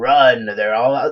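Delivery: deep, booming voice, straining the throat. Wondering if Alex Jones is a paid actor, the speaker does Alex Jones deep voice. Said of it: "scaring everybody with his deep voice".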